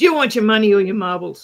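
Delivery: very rough, loud delivery. Speaker retelling what a woman said, face in his, imitating a rough voice. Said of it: "with a really rough voice".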